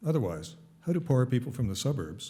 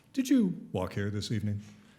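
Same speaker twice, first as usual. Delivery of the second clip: dry, mocking, put-on snarky voice. Asking a question in a put-on snarky voice. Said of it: "I should do it in my snark voice".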